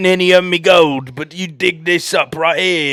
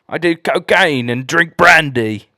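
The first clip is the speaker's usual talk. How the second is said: put-on grumpy, crotchety old British codger voice; 2 semitones lower than usual. Friends riffing on accents, doing a crotchety old british man voice. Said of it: "crotchety old British man".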